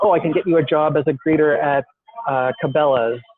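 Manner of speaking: ordinary talk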